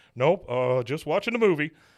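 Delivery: loud, tearful, choked-back sobs, crying but holding together. Retelling a scene where Hank sobs while Peggy asks him, imitating Hank holding back sobs. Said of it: "Hank, are you crying?".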